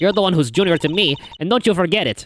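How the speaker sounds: put-on haughty girl voice. Reading a game's dialogue aloud, voicing Franziska von Karma. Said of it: "I did Francisca at first".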